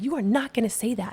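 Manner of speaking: firm, emphatic yelling voice. Retelling what a woman said to a neighbor: imitating someone yelling. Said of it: "and yells it at him".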